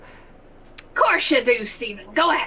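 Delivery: put-on, swashbuckling pirate voice. Playing a mermaid hunter being questioned, answering in a pirate voice. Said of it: "We've cracked out the first pirate voice".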